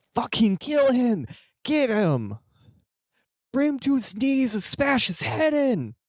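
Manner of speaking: high, loud crowd shouting.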